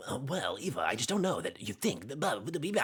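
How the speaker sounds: high, swooping up-and-down anime hero voice.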